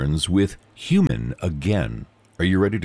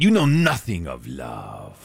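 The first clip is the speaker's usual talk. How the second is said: disdainful, scornful tone in a put-on French accent; 6 semitones lower than usual. Instructing listeners what to say to coworkers, speaker delivers the line in a french accent. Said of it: "with the French accent".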